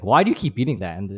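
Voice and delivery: disapproving, judgmental, critical, pointed tone. Retelling coworkers questioning the speaker's diet, mimicking a judgmental, critical tone. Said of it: "saying it like in this judgmental, critical way".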